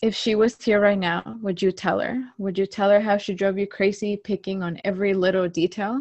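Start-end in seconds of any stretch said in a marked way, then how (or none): none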